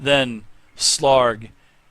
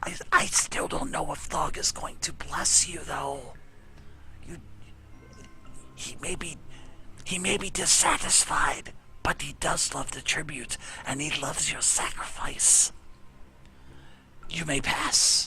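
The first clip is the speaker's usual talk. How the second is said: very quiet, barely audible, almost whispered; 2 semitones higher, 9 dB quieter than usual. Game master voicing a character who lets the players pass, very quiet voice. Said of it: "he kind of says in a very quiet voice".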